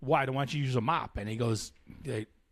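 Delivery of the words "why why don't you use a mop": normal talking voice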